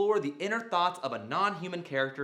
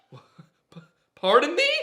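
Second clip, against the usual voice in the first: acted puzzled voice, higher and louder; 9 semitones higher, 10 dB louder than usual. Acting out a scene, surprised by a talking fork: acting confused. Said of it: "change my pitch to show the audience that I'm confused".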